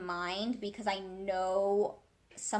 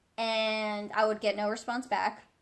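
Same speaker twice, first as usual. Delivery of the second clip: usual speaking voice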